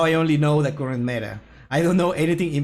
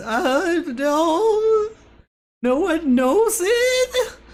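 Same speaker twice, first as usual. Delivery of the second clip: very high, slow, annoying voice, "no" drawn out. Repeating the video's line after praising its voice: annoying Rick and Morty voice. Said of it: "the annoying, um, like, Rick and Morty voice".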